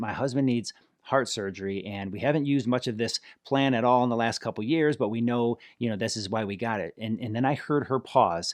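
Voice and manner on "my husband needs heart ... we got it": ordinary talk, nothing marked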